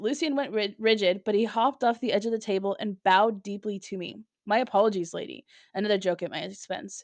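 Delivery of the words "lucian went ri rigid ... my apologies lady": ordinary talk, nothing marked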